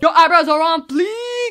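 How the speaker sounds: very loud, fierce and aggressive yet cheery, happy. Imitating how people say a phrase, mock-aggressive but happy. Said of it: "It's always very aggressive, but like happy".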